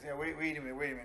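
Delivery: put-on fast, quick Chicago accent. Retelling an audition, quoting Michael cutting in, imitating Michael's Chicago accent. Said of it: "with his Chicago accent".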